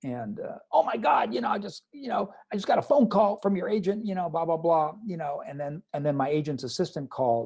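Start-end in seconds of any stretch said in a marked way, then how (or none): 0.7-4.9 high, screaming, gushing voice. Retelling a producer's answering machine message: imitating someone screaming. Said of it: "he's screaming on the phone".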